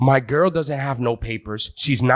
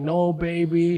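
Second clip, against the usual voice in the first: put-on tearful, crying voice, higher pitch; 3 semitones higher than usual. Retelling an arrest, quoting a partner's reply: imitating someone crying. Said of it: "she was just crying".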